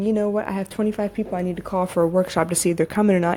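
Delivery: normal talking voice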